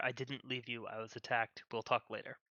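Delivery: soft, hushed half-whisper under the breath. Speaking in character to a twin on the sleigh: half-whispering. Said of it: "I will whisper to her".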